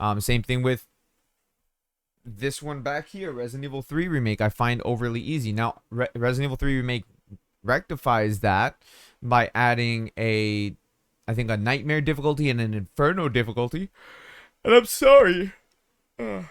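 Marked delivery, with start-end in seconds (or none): 11.5-16.4 yawning speech, higher pitch. A tired speaker discussing a video game, yawning. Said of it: "I'm sorry I'm yawning too much".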